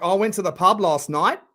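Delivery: statement rising at the end on night. Imitating people who rise at the end of every sentence: question-like rise on night. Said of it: "the inflection at the end of every sentence".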